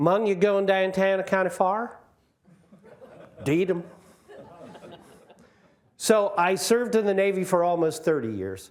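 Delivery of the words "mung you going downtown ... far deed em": Maryland accent, higher pitch. Showing how people in Calvert County talk, in a Maryland accent. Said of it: "which I speak with a Merlin accent".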